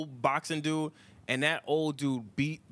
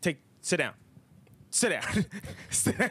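frustrated, totally fed-up, repeated insistent delivery; 4 semitones higher than usual. Retelling a clip where he tells someone to sit: imitating a frustrated Trump. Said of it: "you see his frustration, Trump".

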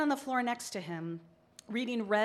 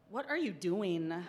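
put-on suspicious tone, lower; 3 semitones lower than usual. A mother retells her son hearing the music and coming out, imitating suspicious asking. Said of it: "he asked suspiciously".

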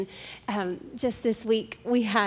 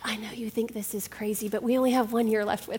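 put-on whisper. Retelling leaning over to someone before leaving: retelling a whisper. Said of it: "and I whisper".

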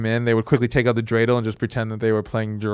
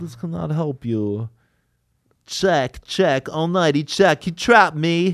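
slow, high-pitched, drawn-out delivery; 6 semitones higher than usual. Talking about a poker scene in Rounders, break into a Malkovich impression. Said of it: "Is that your Malkovich?".

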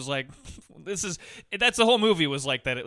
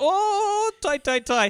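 fake Irish accent, very high and very slow, drawn out; 4 dB louder than usual. Retelling a movie scene with an irish friend: imitating an irish accent. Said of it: "I think that guy's got a fake accent".

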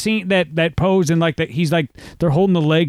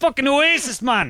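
put-on Scottish accent, higher pitch; 8 semitones higher than usual. Trading put-on accents with another speaker, put-on Scottish accent. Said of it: "now we've gone Scottish".

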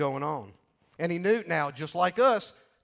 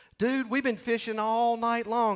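high, totally sarcastic, put-on retort tone; 6 semitones higher than usual. Retelling Peter's reply to Jesus about the nets: put-on sarcasm as Peter. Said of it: "It's total sarcasm".

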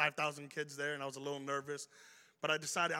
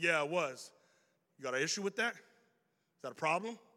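ordinary talk, nothing marked

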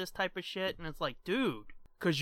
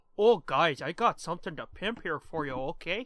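put-on Canadian accent. Teasing the co-host about sounding Canadian on the phone, in a mock Canadian accent. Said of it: "you sounded really Canadian there".

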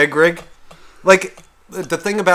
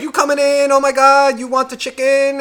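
put-on Chinese accent, pitched higher; 12 semitones higher than usual. Describing the big greeting a man gets as he walks in; put-on Chinese accent impression. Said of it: "that was my fucking Chinese impression".

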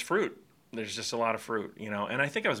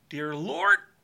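mock choked-up voice, pitched up, catching; 8 semitones higher, 7 dB louder than usual. Retelling how a father began prayers in a restaurant: imitating someone getting choked up. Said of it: "he would just get choked up".

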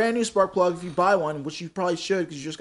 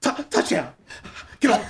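put-on heavy-breathing child voice, higher; 3 semitones higher than usual. Imitating the same kid scoring: imitating a kid's breathy voice. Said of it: "he does, like, the breath".

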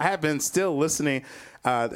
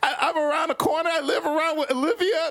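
mock very high, audibly nervous voice; 13 semitones higher than usual. Comedian retelling being asked where he's from, imitating own nervous voice. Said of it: "how you can hear the nervousness in my voice".

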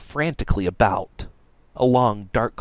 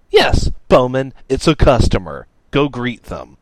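very loud, swooping, dripping mock politeness; 3 semitones higher, 8 dB louder than usual. Hiding behind a table, one person answers a companion's question, sarcastic reply. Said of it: "Radix replied sarcastically".

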